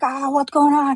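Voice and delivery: play-acted very high-pitched screaming like a crowd. Retelling a crowd coming out of houses: imitating a screaming crowd. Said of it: "they're all screaming, like".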